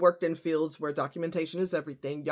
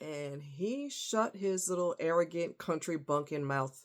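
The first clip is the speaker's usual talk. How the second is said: normal talking voice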